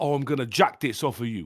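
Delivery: affected, put-on British street accent. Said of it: "You are putting that accent on right there".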